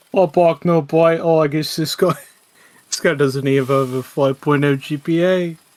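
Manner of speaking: slow, put-on sophisticated bully voice, taunting tone. Taunting an imagined weak player again, a put-on sophisticated bully voice. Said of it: "You sound like a Harvard bully".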